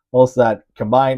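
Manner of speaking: usual speaking voice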